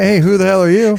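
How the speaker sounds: mock, put-on affectionate, loving tone. Acting out an investor answering a newcomer's call: imitating a loving tone. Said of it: "in a loving way".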